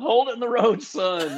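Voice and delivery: high-pitched, shouted yell. Retelling a bus skidding on a wet interstate: imitating dad yelling. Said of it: "him yelling".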